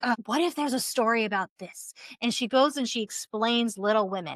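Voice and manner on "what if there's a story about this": put-on stressed musing tone. Retelling a stressed author at the dinner table: imitating a stressed author. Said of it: "she's all stressed".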